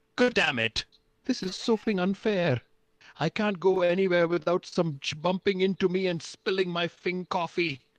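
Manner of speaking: very high-pitched, furious, full-blown tantrum rant. Voicing Kramer freaking out about the coffee: Kramer in a full temper tantrum. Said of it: "Kramer is having a full temper tantrum".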